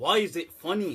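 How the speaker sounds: ordinary delivery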